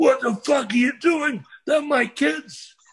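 angry shouting. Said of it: "He says".

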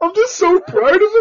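very high-pitched, loud, blubbering sobbing. Retelling how Adam, on his knees with head in hands, spoke while imitating Adam crying.

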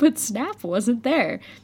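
ordinary delivery, nothing marked

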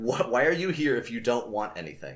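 usual speaking voice

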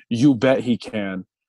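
ordinary talk, nothing marked

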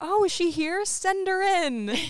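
put-on eager, excited, very high-pitched, loud burst. Retelling a scene where Roscoe walks into a room of politicians, imitating Roscoe all excited. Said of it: "he's just like all excited".

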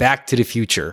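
phrase in standard American accent. Asked to pronounce a phrase the American way, with an American accent. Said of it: "Can you pronounce it in the American way?".

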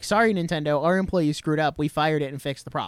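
plain

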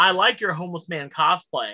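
ordinary delivery

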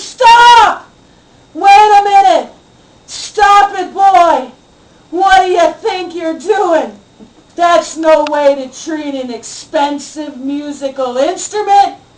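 sudden, screamed outburst. The father wakes as his son goes to smash a guitar: imitating someone screaming. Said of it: "my father woke up screaming".

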